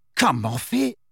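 ordinary delivery

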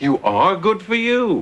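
taken aback, caught off guard. Character reacting to Allie saying she's going out, surprised. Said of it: "You sound surprised".

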